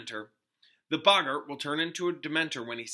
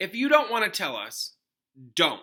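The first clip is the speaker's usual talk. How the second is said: loud, curt, irritable, irritated snap; 4 semitones higher, 5 dB louder than usual. Reading a story aloud, a boy answers a friend: snapping. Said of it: "snapped Ron".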